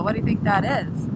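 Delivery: ordinary talk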